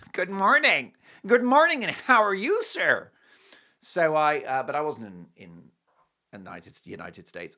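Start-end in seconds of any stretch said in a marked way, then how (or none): 0.1-3.1 very loud, high, booming, open-mouthed American accent. Comparing how Canadians and Americans open their mouths, doing a wide-open American accent. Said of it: "a whole mouth comes out".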